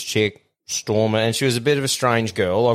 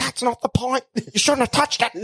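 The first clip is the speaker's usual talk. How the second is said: very high, furious, angry ranting voice; 13 semitones higher than usual. Retelling how the girl kept going off after they apologised: imitating someone going off angrily. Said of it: "just going off".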